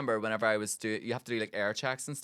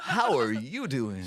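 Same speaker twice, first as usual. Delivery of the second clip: dramatic, loud, slow radio presenter voice with pauses; 2 semitones higher, 5 dB louder than usual. Doing an impression of a radio presenter signing off traffic and travel: imitating Ian's radio voice. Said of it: "tell me I did not sound like that".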